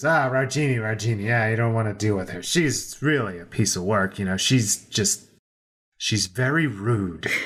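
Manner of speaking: audible muttering under the breath. A character pipes up to warn about another, muttering under his breath. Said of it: "he says under his breath".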